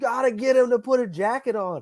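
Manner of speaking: high-pitched, bad-tempered angry screaming, acted out. Describing the starter who screamed at him, the speaker is imitating Ricky screaming. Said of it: "he's like screaming at me".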